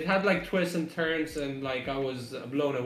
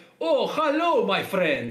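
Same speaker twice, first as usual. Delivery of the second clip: very slow, loud, swooping, sing-song fake Greek accent; 6 semitones higher, 7 dB louder than usual. Retelling how a man in an ancient city introduced himself, in a put-on Greek accent. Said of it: "This guy is fucking Greek".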